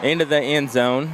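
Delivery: ordinary delivery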